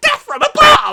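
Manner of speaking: shrill, high, very loud cry. Retelling a quick line from a game: rushed Starscream line. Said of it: "says it so quick because he's flying".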